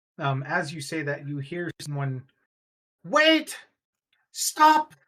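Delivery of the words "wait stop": shouting, much higher and louder. Game master voicing someone calling out from down the street, shouting. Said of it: "as a voice shouts".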